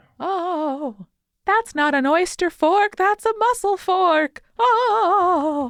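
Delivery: very high Victorian ghost voice with drawn-out "oh". Asked by her co-host for a sample, she performs a Victorian ghost voice. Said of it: "I will need a sample of your Victorian ghost voice".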